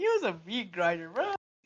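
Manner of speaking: mock upbeat, pleased, cheerful delivery. Imitating how another speaker described his dodgeball coach: imitating Noah's happy tone. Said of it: "the tone of his voice is just like".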